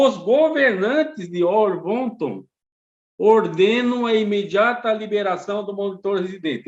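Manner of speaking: very slow, deliberate, emphatic stress. Explaining a process to listeners, deliberately speaking very slowly for emphasis. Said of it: "estou falando devagarinho para dar destaque".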